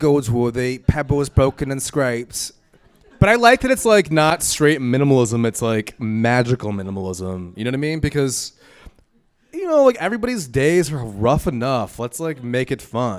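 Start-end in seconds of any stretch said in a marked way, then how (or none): 0.0-2.5 funny, botched, really bad fake British accent. Urged by the others to try it out, speak in a bad put-on British accent. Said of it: "He has a really funny British accent that he tries to put".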